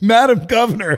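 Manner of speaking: mock calling out, high and mild. Retelling someone calling out to her along a parade route: imitating someone yelling. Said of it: "someone just yells at her".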